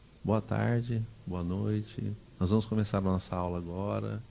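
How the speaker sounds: barely audible, very soft, hushed teacher-voice murmur. Retelling how a teacher began class: imitating a teacher speaking very softly. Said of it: "falava bem baixinho".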